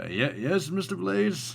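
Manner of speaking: half-awake, stumbling speech. Voicing Brooke waking up and answering Mister Blaze: groggy Brooke voice. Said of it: "he's a little bit groggy still".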